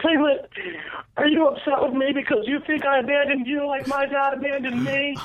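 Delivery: very high, piping cartoon-style voice. Retelling talking to Taylor: Piglet voice. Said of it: "I was talking to him in the Piglet voice".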